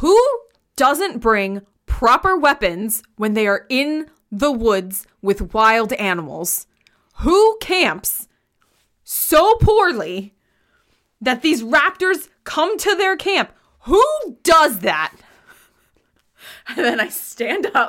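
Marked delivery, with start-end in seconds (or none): 0.0-15.1 very loud scolding tone with rising pitch. Narrating a scene, the speaker's character addresses others without looking at them: very loud scolding. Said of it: "very loudly saying".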